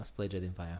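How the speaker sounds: sounding sad. Deciding which game to play next, the speaker agrees in a sad tone. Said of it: "You said that with a sad tone though".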